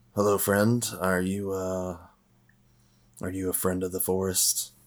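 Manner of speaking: rough, gravelly character voice. Player's character calls out to someone hidden in the bushes, gravelly dragonborn voice. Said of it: "You hear a gravelly dragonborn voice".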